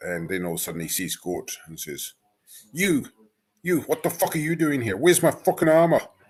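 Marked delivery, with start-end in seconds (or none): 2.7-6.0 very high, loud, furious raging yell. Voicing a dwarf who wakes, lashes out and demands his armor: angry outburst. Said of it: "calm down now".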